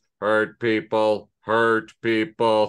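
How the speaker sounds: fifties sci-fi robot voice, low, flat monotone. Explaining how a phrase sounds in their head, a speaker uses a 1950s sci-fi robot voice. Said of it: "I hear it in that robot voice from like nineteen fifties sci-fi things".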